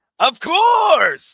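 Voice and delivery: very loud, shrill, high villain yell, bellowed. Playing a game and yelling in character: Eggman voice yelling. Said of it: "That was Eggman. Going, "Of course!"".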